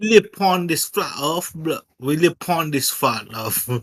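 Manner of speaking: best-effort put-on Jamaican accent. Answering a request to say a flat earth line: jamaican accent. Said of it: "Give us your best Jamaican accent".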